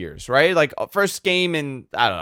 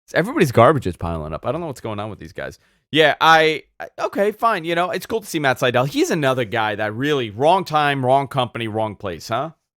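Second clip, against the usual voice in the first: ordinary talk, nothing marked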